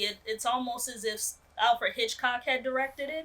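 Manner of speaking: ordinary delivery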